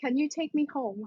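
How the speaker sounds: voiced hush, stage half-whisper style. A player in a role-play quietly asks a talking hammer a question: half-whispering. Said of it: "I'm gonna whisper to the hammer".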